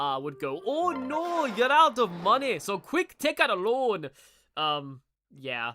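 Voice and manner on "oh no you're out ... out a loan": put-on Scottish accent, higher, slower. Speaker recalls a childhood game's advisor warning about money; Theme Park World advisor's Scottish accent. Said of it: "extremely Scottish sounding".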